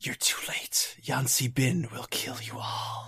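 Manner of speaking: soft, breathy whisper loud enough to carry. Narrating to the players, speak as the cult leader, whispering as Arisi. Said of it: "so she whispers".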